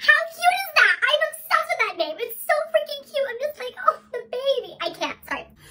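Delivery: very high, loud gushing squeal.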